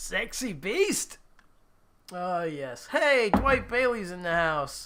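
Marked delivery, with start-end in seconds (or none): 0.0-1.2 put-on Scottish accent, higher. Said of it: "like fat bastard".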